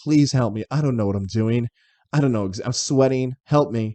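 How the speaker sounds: frantic, desperate, pleading, begging tone. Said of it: "I probably was going in there begging".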